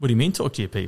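imitated Indian accent. Retelling what a man said after a switch flipped, in an Indian accent. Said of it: "In his Indian accent".

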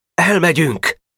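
very high, eager, wholehearted, enthusiastic group shout. The boys all answer Boka's bold plan together: wholehearted shout. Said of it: "mindenki egy szívvel lélekkel kiáltotta".

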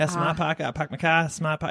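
put-on Boston accent. Describing a Super Bowl ad where celebrities do accents, put-on Boston accent. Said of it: "they're all doing Boston accents".

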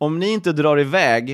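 ordinary delivery

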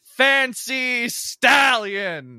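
very high, loud yelling shout. Voicing a character naming her mech from within: shouting. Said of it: "you can hear shouting from within".

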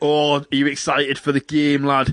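put-on slipping into Scottish accent. Retelling what a man said to a kid on a phone call, in an accidental scottish accent. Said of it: "He's not Scottish".

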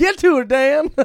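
put-on old gold prospector voice, very high, very loud. Co-host trying out his future self's voice urges Dan on, old prospector voice. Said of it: "in my apparent future self's Prospector voice".

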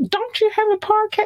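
put-on very high, bossy child voice.

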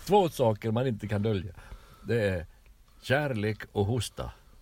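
Finland-Swedish accent. Demonstrating a saying in different Swedish accents, in a Finland-Swedish accent. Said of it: "det där var finlandssvensk".

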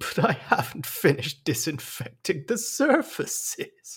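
speaking through laughter, high-pitched. Retelling how a man answered Kate's invitation, imitating him laughing while talking. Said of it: "he said it with laughter".

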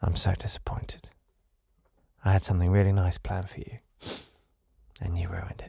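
hushed, very quiet, soft voice. Acting out a teacher who waits for the class to go silent, then speaks very quietly. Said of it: "And then just very quietly say".

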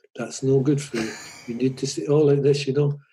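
soft, hushed, gentle quiet voice. Retelling a manager's talk in a small room: imitating a slow, quiet voice. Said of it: "talked in the slowest, quietest voice".

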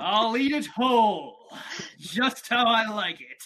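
over-the-top, cheesy, boastful superhero voice. Voicing Q, answering a server who asks about flavoring; Q's cheesy superhero-wannabe voice. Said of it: "Listen as the cheesy superhero wannabe Q, tenderhearted top chef Mira, brie-llient nut loving inventor Tweezers, and owl hating cartography instructor [name] gather in Lockhaven where they’re given an important mission: F".

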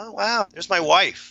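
put-on high, guileless, innocent little-kid voice. Retelling how he goes on stage: imitating an innocent little kid.

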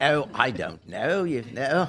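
poorly faked Cockney accent.

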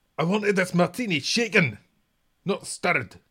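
terrible put-on voice, very high, shrill, loud and booming. Playing the hero spy opposite a villain who only says yes, do a terrible Duncan Bannatyne impersonation. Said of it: "this terrible impersonation".

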